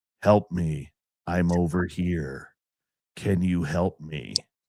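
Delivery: very low, flat, toneless monotone drone. Retelling a frightening night, the speaker repeats what a mimicking voice said, very monotone. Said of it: "very monotone".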